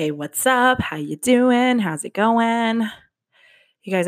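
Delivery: winded, short of breath. Greeting your audience at the start; out of breath. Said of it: "I'm so out of breath".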